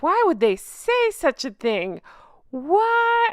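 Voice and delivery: fake shock, high and slow, long drawn-out "what". Reacting to a critic's harsh comment about a woman, pretend shock voice. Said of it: "That's my pretend shock voice".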